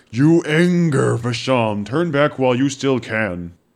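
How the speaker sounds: thundering, magnified booming voice, very loud. In a role-playing game, a player speaks in character with a booming voice. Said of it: "have my voice boom up to 3 times".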